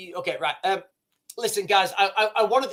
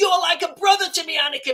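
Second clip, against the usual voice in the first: high-pitched, raised shout; 9 semitones higher than usual. Retelling a lightsaber duel where the two fighters shout at each other: imitating Obi-Wan shouting. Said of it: "they're shouting at each other".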